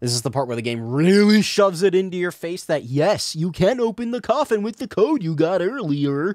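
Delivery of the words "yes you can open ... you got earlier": high, muppet-like puppet-show cartoon voice. Explaining a game's coffin puzzle to listeners, in a Sesame Street character voice. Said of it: "I don't know why I sound like a Sesame Street character".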